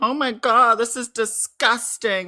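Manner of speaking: very high, weepy, drawn-out outraged whine. Mocking people who complain about being doxed: imitating people crying foul. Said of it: "they're sitting there crying, going".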